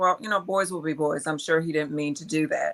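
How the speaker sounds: ordinary talk, nothing marked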